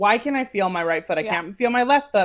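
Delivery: ordinary delivery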